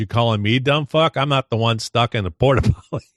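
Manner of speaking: plain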